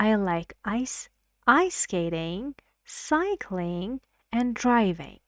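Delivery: rising on list items, pitch falling on "driving". English lesson on list intonation: rise, rise, fall on driving. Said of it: "rising, rising, and the last word on the list has falling intonation".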